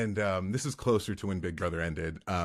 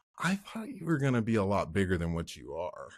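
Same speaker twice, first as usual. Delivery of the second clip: swooping, disappointed put-on kid voice. Retelling what a little kid said while looking up at him, imitating a disappointed kid. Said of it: "so disappointed".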